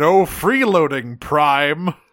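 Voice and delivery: mild robot-villain warlord yell. Retelling a cartoon scene where Megatron appears in the door: Megatron yelling. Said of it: "Megatron appears in the door and just yells".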